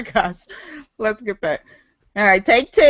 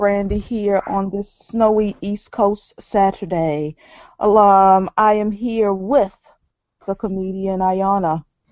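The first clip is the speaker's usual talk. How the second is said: subdued, sapped, low-energy delivery, low and slow; 4 semitones lower than usual. Host opening the show with a comedian guest, low energy. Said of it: "Why are you so low energy all of a sudden?".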